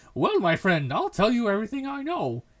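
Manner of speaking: hearty, cheery, outgoing, loud and animated. Reading a game character's line: cheerful deep voice. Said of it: "he says cheerfully in a deep voice".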